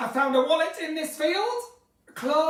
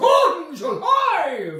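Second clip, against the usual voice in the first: big loud very low voice, then higher and louder; 3 semitones higher, 7 dB louder than usual. Answering a request for an impression: Brian Blessed impression. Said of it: "That's actually quite good".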